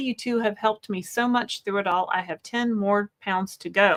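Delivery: ordinary delivery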